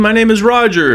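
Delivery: put-on strong Indian accent. Speaker imitates a guy offering cheap Google first-page ranking giving his name, strong Indian accent. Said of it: "And they have a strong Indian accent".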